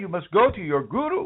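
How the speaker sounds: put-on Indian accent. Acting out advice someone would give you, put-on Indian accent. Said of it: "I'm not really good at my Indian accent today".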